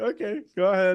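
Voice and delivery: high, prim, proper voice. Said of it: "sits down all proper".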